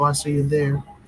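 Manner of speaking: ordinary talk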